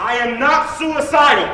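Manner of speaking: shouting. Walking out of court after the sentence is read: yelling. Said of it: "Jesse yells it twice again".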